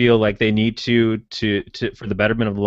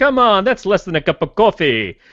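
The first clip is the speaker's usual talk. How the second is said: terrible, exaggerated put-on Jamaican accent, pitched up; 9 semitones higher than usual. Quoting Daryl's closing donation line: imitating Daryl in a terrible Jamaican accent. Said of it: "That was a terrible accent".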